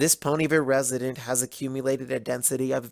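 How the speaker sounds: ordinary delivery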